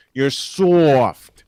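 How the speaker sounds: put-on New York accent, loud. Talking to the camera, redoing the line in a New York accent. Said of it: "Let me get my New York accent".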